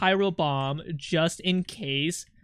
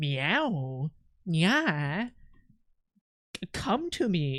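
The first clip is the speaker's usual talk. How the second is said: acted, sultry seductive moan, very slow, drawn out; 4 dB quieter than usual. Mocking other streamers who meow for their viewers, mocking a seductive meow. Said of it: "They also don't meow like me. They go like".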